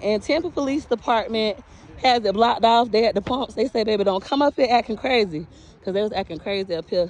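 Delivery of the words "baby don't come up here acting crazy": ordinary talk, nothing marked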